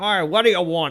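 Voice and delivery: very loud, gruff bartender-style barking voice. Narrating a game scene, the bartender greets Kiz at the bar in a gruff voice. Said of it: "She's got a very gruff voice".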